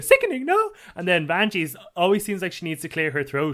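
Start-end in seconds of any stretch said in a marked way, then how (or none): 0.0-0.7 very high voice, pushed to the top of the register. Contrasting mother and daughter voices, high Alexis Mateo voice. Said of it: "Alexis Mateo is always up in her higher register".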